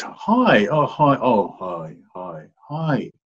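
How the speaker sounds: hesitant, very slow, wavering, with swooping "hi". Speaker showing how someone in depression says hi on the phone, unconfident hi. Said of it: "there's no sense of confidence in you".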